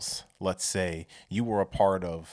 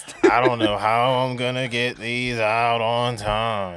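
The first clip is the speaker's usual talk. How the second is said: mock miserable voice, higher and louder; 4 semitones higher, 8 dB louder than usual. Retelling how his partner sounded coming home with more orders: imitating her miserable tone. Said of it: "I'm saying that in this tone because she started to become, um, what's the word I'm looking for? Miserable".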